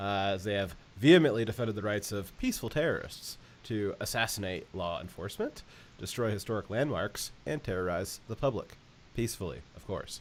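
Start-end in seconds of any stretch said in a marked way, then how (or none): 9.2-10.2 soft, mocking, sarcastic aside. Commenting to viewers on mainstream media claims, sarcastic. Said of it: "I'm saying it sarcastically".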